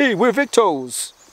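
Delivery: put-on poor American accent. Joking about loud brand messaging on a bag: crap american accent. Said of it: "That was a crap accent".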